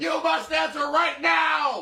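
high, slow mock shout. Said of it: "easier to scream?".

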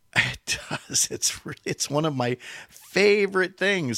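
oh-so-sarcastic, very slow and drawn out. Complaining about Google signing people out mid-task, oh so sarcastic. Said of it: "he said oh so sarcastically".

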